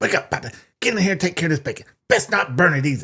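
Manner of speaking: acted hateful, disdain-dripping, scornful tone. Retelling how an audiobook reader voiced Petunia: imitating Petunia's disdainful voice. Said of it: "the disdain in her voice when she was like".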